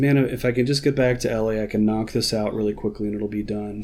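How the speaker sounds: plain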